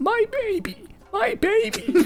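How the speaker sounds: piercing, shrill, very high cry. One voice is heard among the people in a little town, in a shrill voice. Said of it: "you hear one shrill voice".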